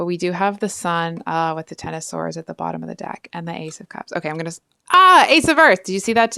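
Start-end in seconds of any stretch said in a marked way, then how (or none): 4.9-6.4 very loud, high, thrilled, excited outburst. Drawing cards from the deck, letting out an excited yell into the mic. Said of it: "I didn't mean to just yell that into the mic".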